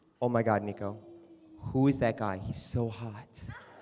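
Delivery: very low-toned, hushed voice, under the breath. Retelling what a friend said at her table, mimicking a very low-toned voice. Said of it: "she says in a very low toned voice".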